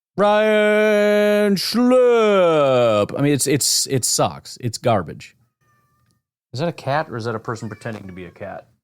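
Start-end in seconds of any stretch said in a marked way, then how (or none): 0.2-3.2 sports announcer delivery, higher. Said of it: "you could do every name with an announcer voice".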